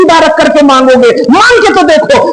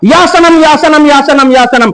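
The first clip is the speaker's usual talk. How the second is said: ordinary talk, nothing marked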